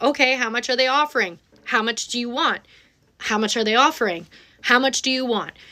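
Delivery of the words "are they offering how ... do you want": ordinary talk, nothing marked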